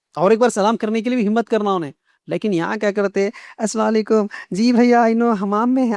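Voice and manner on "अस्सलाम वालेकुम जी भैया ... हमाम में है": acted, sugary-polite, sweet, honeyed voice. Showing how the greeting is said in such a sweet voice: sweet-voiced greeting. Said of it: "इतना मीठे आवाज से बोलने के बाद".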